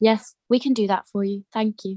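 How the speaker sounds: the calmest, most unruffled, composed delivery. Imitating Michael Masi's voice after the others bring it up: calm Michael Masi voice. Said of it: "it's the most calmest thing I've ever heard".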